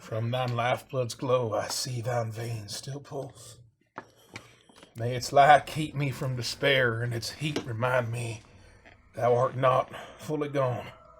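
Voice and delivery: murmured, incantation-like muttering under the breath. Voicing a character who creeps forward muttering a prayer. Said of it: "I'm muttering".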